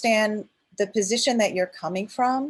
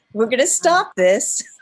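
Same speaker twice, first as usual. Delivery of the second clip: motherly voice, louder; 4 dB louder than usual. Retelling how they stop people who attack their character: mom voice. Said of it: "I call it my mom voice".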